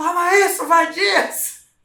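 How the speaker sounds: put-on shrill, very high shrieked yell. Retelling how a man threw the ball back, retelling a shout. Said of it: "jogou a bola de volta gritando".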